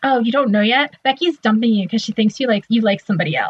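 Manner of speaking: ordinary talk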